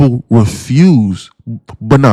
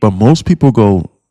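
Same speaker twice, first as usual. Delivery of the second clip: normal talking voice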